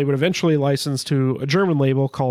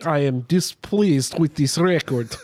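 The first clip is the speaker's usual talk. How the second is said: failed fake Dutch accent that sounds Russian. Speaker tries a Dutch accent for Displeased Records: bad Russian-sounding accent. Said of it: "It's Russian".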